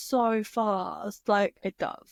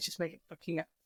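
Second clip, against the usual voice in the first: put-on annoyed, fed-up, irritated tone; 4 semitones lower, 12 dB quieter than usual. Retelling what he said while getting irritated: imitating an irritated man. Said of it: "he was getting irritated".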